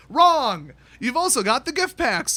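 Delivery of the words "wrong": loud, shouted delivery into a mic. Announcing it first, then saying wrong very loudly into the mic. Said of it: "I'm about to say wrong very loudly into the mic".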